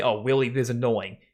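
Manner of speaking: normal talking voice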